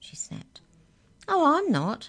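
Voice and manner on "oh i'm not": very high, loud, infuriatingly cheerful little mouse voice. A caged mouse answers someone who snapped at it, infuriatingly cheerful. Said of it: "said the mouse in the same infuriating, cheerful voice".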